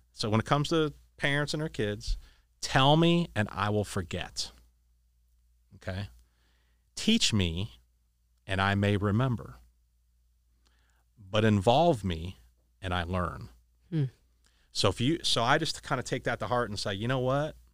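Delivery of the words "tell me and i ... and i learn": slow, deliberate, each phrase weighed and spaced. Quoting a saying to the listener, slow and deliberate. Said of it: "you got to say this slow".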